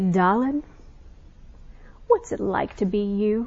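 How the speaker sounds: put-on broad, very Southern accent, dad voice. Retelling her dad's weekly question: imitating her dad's Southern accent. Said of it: "he's very Southern".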